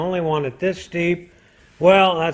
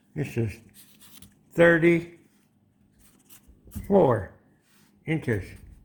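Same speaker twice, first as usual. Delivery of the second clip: speech muffled by pencil in mouth; 4 dB quieter than usual. Marking off a piece while measuring, the speaker talks with a mouth full of pencil. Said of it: "Had my mouth full of pencil".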